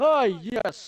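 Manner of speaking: put-on posh British accent. Retelling how a villager speaks English, in a posh British accent. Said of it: "A posh British accent he has".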